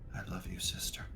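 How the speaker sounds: muttered quietly under the breath. Voicing a character speaking to his general at an execution: said under his breath. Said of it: "hear him say under his breath".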